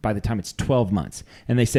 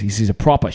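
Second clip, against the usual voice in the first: imitated Australian accent. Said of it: "He goes".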